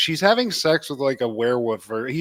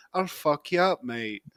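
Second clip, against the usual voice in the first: put-on English accent, quieter and slower; 7 dB quieter than usual. Talking about Lennox Lewis, voicing an imagined Englishman: tough Englishman voice. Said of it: "the energy of an Englishman who's like".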